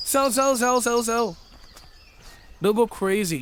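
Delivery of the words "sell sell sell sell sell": mock scream, yelled out loud. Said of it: "a guy will scream".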